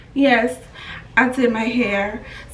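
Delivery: subdued, slow, measured, reined-in happiness. Retelling her reply to a lady asking about her hair, with toned-down happiness. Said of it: "I toned my happiness down".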